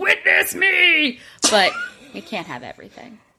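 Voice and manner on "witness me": high, slow screamed battle cry. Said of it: "and maybe screaming".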